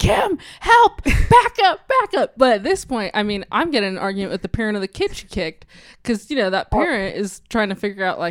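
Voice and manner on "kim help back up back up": very high, slow, drawn-out, urgent shout. Recounting a chaotic scene, quoting a woman yelling for help, retelling her yell. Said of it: "she's literally yelling".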